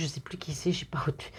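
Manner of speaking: quiet whispered voice.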